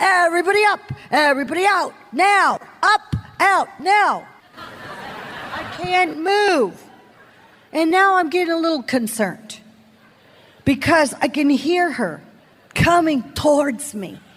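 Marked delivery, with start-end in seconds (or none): 0.0-4.3 acted authoritative, commanding, order-giving voice. Retelling what a security guard said, imitating her commanding voice. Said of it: "Then she used her commanding voice".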